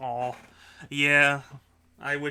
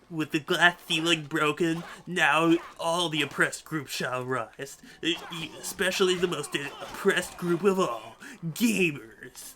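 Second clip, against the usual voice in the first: nerdy cartoon gamer character voice; 3 semitones higher than usual. Quoting a line from a Batman cartoon to friends, in a Batman Beyond gamer voice. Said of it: "such a perfect gamer voice".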